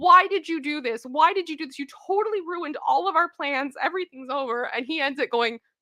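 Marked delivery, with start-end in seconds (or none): 0.0-4.7 mock furious yelling, high, angry screaming. Retelling how everyone screamed at the player who ruined the plan, acting out the screaming. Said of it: "they're all just screaming at him".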